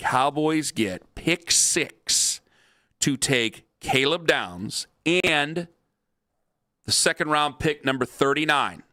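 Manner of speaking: very slow, deliberate, each word spaced out. Reading out a proposed trade to a listener, speaking as slowly as possible. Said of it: "I'll speak as slowly as I can".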